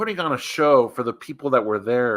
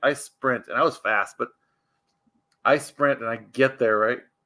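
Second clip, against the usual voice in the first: ordinary talk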